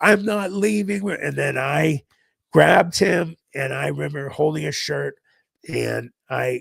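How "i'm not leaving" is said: high screaming, like bloody murder. Recounting grabbing a man who refused to go, the speaker retells someone screaming bloody murder. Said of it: "he's screaming and bloody murder".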